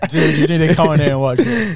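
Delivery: mock American accent, laughing. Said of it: "Did you just put on an American accent?".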